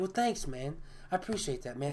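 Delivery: very quiet, very soft, gentle hushed voice. Retelling a celebrity's thankful reply while cooking for him: imitating a very soft voice.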